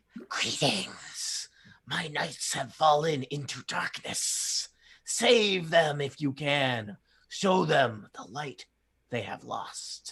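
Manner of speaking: dragon voice hissing out each word. Game master voicing a fiery dragon addressing a player's character, in a hissing dragon voice. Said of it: "fiery dragon hisses".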